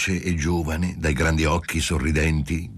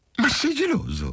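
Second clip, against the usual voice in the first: very high, very pleased, delighted cry. Answering her partner's question about another woman, she exclaims, very pleased. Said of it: "Ella esclamò di nuovo assai contenta".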